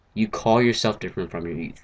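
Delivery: plain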